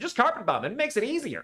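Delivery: mock American accent. Redoing a line a second way, this time in an American accent. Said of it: "Or with an American accent".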